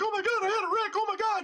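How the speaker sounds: play-acted very high, frantic, hysterical sobbing wail. Retelling a motorbike wreck, quoting a crying passenger: imitating someone in hysterics. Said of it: "going into hysterics".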